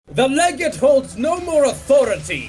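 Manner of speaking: furious shouting. Voicing a commander rejecting the Legate's authority: Caius yelling. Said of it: "Caius yells".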